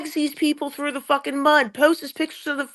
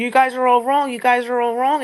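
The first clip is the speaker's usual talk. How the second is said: usual speaking voice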